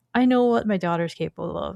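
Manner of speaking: ordinary delivery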